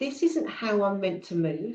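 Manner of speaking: ordinary delivery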